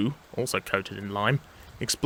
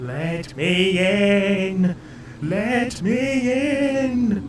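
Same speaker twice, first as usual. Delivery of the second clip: high, very slow, drawn-out, eerie ghostly wail; 8 semitones higher than usual. Reading the story aloud, Percy wails from inside the shut shed: Percy's spooky wail. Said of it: "wailed Percy in a spooky voice".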